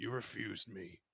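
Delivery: rough female delivery. The game master voices a woman who remembers a player's character: gruff lady voice. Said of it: "Whereas I gotta be more gruff".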